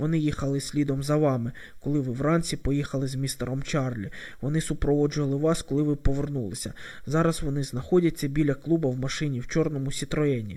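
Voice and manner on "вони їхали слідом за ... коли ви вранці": plain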